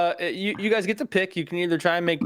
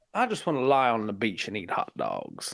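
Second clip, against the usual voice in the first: very low put-on voice with swooping pitch; 8 semitones lower, 4 dB quieter than usual. Saying a phrase someone gave, in a Benoit Blanc impression. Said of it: "give me a phrase to say as Benoit Blanc".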